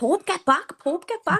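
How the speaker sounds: high-pitched shout. Recounting screaming at the ipad, retelling a shout.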